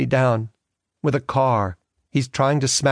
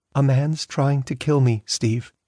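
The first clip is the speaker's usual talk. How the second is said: plain, simple, chillingly grave, dead-serious tone. A woman urging a man to come home speaks quietly. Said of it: "Then she said quietly".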